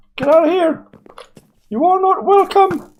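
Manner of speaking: squeaky, very high, swooping little voice. Spotting a creeper and ordering it out of the place, in a squeaky voice. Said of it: "I do not have a squeaky voice".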